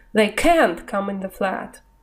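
can't stressed in British style. Explaining british negatives with an example, stress on can't. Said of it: "на него идет акцент. Вот послушайте".

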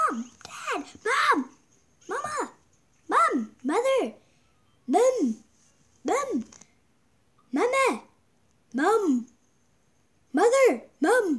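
mock high, long, drawn-out, repeated calling shouts. Retelling how the speaker called out for the parents, retelling own shouting. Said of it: "I shouted like".

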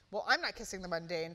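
plain

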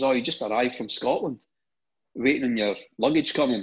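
plain

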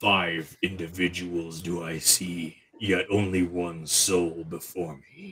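deep, ancient dragon voice. A game master voices a creature speaking Draconic to the party: deep ancient voice. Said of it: "It says in a deep ancient voice".

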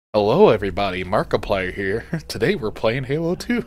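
loud, belted-out delivery. Showing another speaker how a YouTuber sounds: Markiplier impression. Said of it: "That's what he sounded like".

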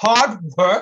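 loud guffawing scoff, laughing it out. The grasshopper answering the ant about getting the role, guffawing. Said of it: "the grasshopper guffawed".

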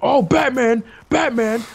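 high, loud, excited calling out.

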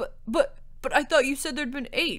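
spluttering. He protests her account of the eight knights: sputtering. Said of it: "Thirindel sputtered".

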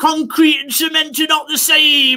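put-on, very high, furious, angry shout. Retelling a live heckle: imitating an angry yelling heckler. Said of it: "an angry Italian guy started yelling at me".

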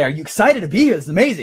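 bright lilt climbing at each ending. A speaker demonstrating how they now talk, with upbeat rising inflection. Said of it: "But now I go like this".

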